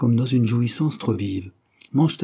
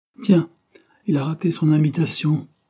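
jokey, playful teasing, pitched up; 5 semitones higher than usual.

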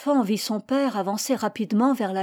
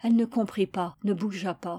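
usual speaking voice

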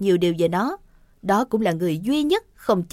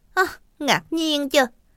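dry, mocking, sarcastic tone; 4 semitones higher than usual. Responding to a woman showing off her new top, sarcastic. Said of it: "[name] cất giọng mỉa mai".

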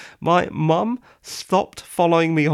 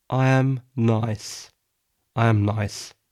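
low, cold, odd, strange-sounding delivery; 5 semitones lower than usual. Insisting they are nice, the speaker says it cold and weird. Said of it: "That sounded cold and weird".

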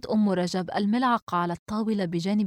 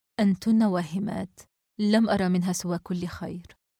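plain

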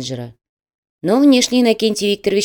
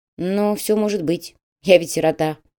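ordinary delivery

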